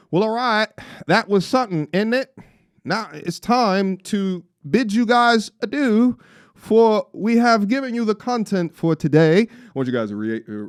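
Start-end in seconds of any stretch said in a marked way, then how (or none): 0.1-9.4 attempted UK accent, pitched up. Signing off to viewers, the speaker tries out a uk accent: attempted british accent. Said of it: "I'm going to try my U K accent".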